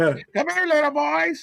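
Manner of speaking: put-on cartoon old man, pitched way up, slow, drawn out. Joking that a wrestler looks like the guy from Family Guy: Family Guy old man voice. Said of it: "he looked like the guy from Family Guy".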